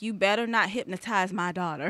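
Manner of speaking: ordinary delivery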